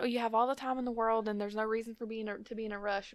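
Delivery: breezy, soft, sarcastic put-on calm tone. Mocking the other speaker's relaxed advice about lines: mocking the other's calm talk. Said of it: "you're sitting here talking like".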